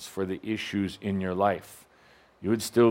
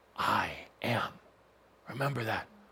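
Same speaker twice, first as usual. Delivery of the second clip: soft, gentle, little whisper; 8 dB quieter than usual. Showing the little whisper that says it is present: whispering. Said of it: "once in a while a whisper".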